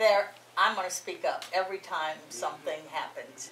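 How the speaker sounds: ordinary delivery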